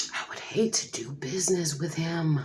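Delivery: soft, half-whispered, confidential aside. Retelling what a representative said about a loud caller: imitating someone half-whispering. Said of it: "she kinda whispered".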